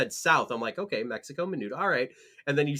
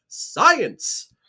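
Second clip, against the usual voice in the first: very high, very loud shout; 11 semitones higher, 8 dB louder than usual. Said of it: "saying it in the [name] voice".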